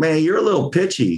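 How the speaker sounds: Southern twang. Retell Scott's feedback at rehearsal the night before the first show, imitating Scott's Southern twang. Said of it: "Scott in his Southern twang".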